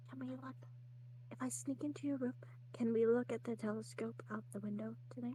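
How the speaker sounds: soft, hushed, whispered aside. The narrator voices a character who leans over to a player, whispering. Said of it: "she kind of whispers over to you".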